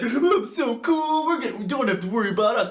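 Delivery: giddy, cocky, bragging delivery. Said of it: "He's like".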